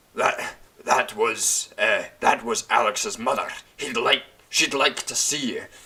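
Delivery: put-on angry Scottish man's accent. Retelling a scene from a show: imitating an angry Scottish man. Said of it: "the angry Scottish man goes".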